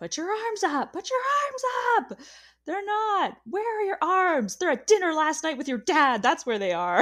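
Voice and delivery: put-on very high, piercing, shrill screaming rant. Retelling a dance coach's rehearsal rant: imitating Abby screaming. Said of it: "Abby is just screaming".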